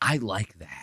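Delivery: put-on deep wispy voice. Showing the voice Nick does: imitating Nick's deep wispy voice. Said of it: "that little deep, like, wispy thing with his voice".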